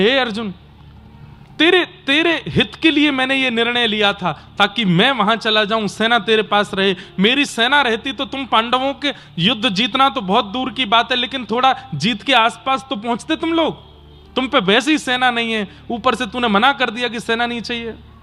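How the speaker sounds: ordinary talk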